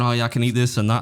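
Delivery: ordinary delivery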